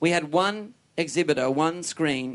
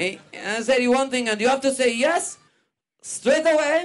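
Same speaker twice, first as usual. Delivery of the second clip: very high fake French accent, vaguely Russian-sounding; 9 semitones higher, 4 dB louder than usual. Playing a Frenchman character in a bit, put-on French accent. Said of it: "my my French accent sounds vaguely Russian".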